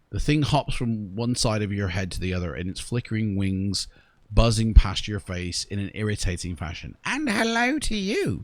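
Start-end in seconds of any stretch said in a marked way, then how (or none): 7.0-8.4 very high, drawn-out chirping creature voice. A narrator voices the creature answering a greeting, in a chirping creature voice.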